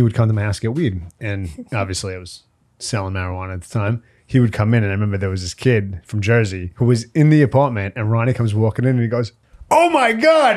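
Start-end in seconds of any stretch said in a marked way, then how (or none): 9.7-10.6 very high, shrill screaming shriek. Retelling a kid's reaction when a visitor walked into the apartment, imitating someone screaming. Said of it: "And he starts screaming".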